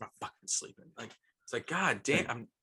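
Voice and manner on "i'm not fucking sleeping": mock angry tone, much quieter. Describing a woman who snaps when woken, the speaker imitates her; imitating an angry sleeper. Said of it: "she's like a very angry sleeper".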